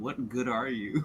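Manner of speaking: muttered grumble, half to himself, under the breath. Voicing Malik, who turns to face a corner, grumbling under breath. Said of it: "Under Malik's breath, he grumbles".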